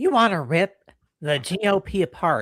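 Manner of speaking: put-on nasal voice. Asked to read a quote aloud in her voice, doing a nasal Megyn Kelly impression. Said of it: "read it in her voice. can you get that nasally?".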